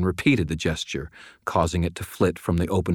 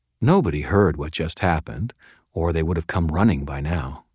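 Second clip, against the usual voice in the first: plain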